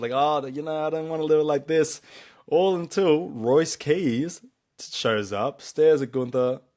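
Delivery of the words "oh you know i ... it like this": coy, teasing, pitched up high. Retelling how Gunther answered Cody, imitating Gunther playing coy. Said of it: "kinda playing coy with him, teasing him".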